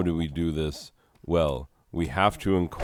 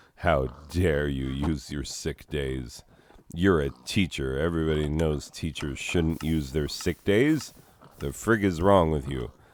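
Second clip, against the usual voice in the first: ordinary delivery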